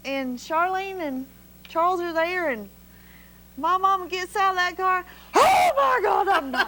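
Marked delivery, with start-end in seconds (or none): 5.3-6.7 high, stretched-out, drawn-out yell. Retelling the moment mama got out of the car, retelling a yell. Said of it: "oh I'm sorry. I'm yelling".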